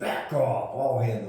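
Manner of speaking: very loud, booming shout. Retelling what she yelled when others stuck up for her: imitating her very loud yell. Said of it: "a very loud voice, she would yell at us".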